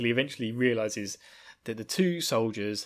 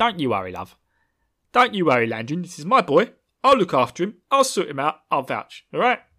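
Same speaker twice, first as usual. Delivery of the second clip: loud, high, booming nosy-neighbour voice; 5 semitones higher, 8 dB louder than usual. Reading Wheel of Time characters as Michael Caine: Michael Caine voice. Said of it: "everyone in the Wheel of Time book is suddenly Michael Caine".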